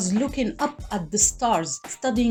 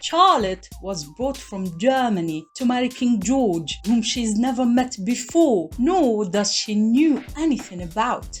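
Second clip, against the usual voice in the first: plainly assumed, put-on British accent. Summarizing a show's plot for viewers in a put-on british accent. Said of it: "maybe I should talk in a British accent".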